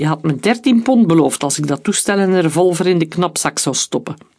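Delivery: plain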